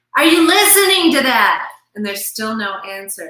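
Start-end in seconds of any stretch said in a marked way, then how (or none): 0.2-1.7 high, very loud hollering. Retelling an example of a husband calling to his wife: imitating a husband yelling. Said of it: "So he yells again".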